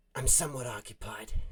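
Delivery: dusty, almost chain-smokerish voice. Narrating a scene, voicing a woman character who replies, dusty chain-smoker voice. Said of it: "It's kind of like dusty, almost chain smokerish".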